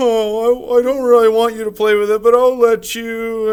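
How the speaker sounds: high, whiny, near-crying voice, drawn-out "oh". Demonstrating the passive way to let someone play with a toy: whiny passive voice. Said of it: "you're kind of having a whiny voice".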